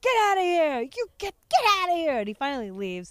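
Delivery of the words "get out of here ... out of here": mock very high, shrill, high-pitched shouting. Retelling a woman ordering a man away: imitating someone screaming. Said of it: "so they're screaming".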